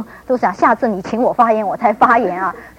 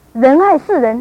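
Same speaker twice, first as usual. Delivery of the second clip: Mandarin spoken with a Shanghai accent; 3 semitones higher, 4 dB louder than usual. Showing how Shanghai people say a phrase: Shanghainese accent. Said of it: "上海人怎么讲呢？".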